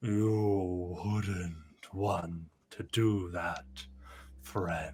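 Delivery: low rumbling voice. Narrating a voice that comes from a tree toward the listener: low rumbling voice. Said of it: "a low rumble of a voice".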